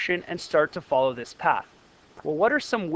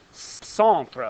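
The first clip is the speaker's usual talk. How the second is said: strange put-on French accent on "centre"; 2 semitones lower than usual. Physics lesson on the word centripetal, saying centre; strange french accent. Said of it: "I just said it with a strange French accent".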